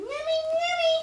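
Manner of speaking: put-on coaxing baby talk, high, slow, sing-song.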